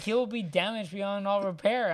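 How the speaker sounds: ordinary talk, nothing marked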